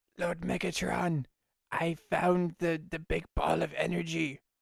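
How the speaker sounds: high robot villain voice. Asked to do his best Starscream impression, delivering a Starscream impression. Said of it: "Starscream impression".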